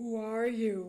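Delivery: very loud, gruff, demanding voice. A character confronts a stranger, demanding an answer gruffly. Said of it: "he demanded gruffly".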